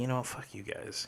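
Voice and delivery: put-on mutter under breath. Retelling a reply to bandmates who asked for no drinking: imitating muttering under breath. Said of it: "under my breath".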